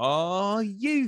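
British-accented crowd shout. Imitating what fans scream when the goalie throws the ball: British accent. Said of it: "like, a British accent".

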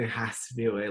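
ordinary talk

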